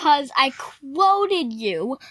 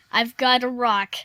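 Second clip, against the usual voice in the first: ordinary talk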